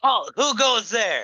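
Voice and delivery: shrill, very loud, high-pitched yell. Calling out to an unseen creature in a cave: yelling. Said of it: "And as you yell that".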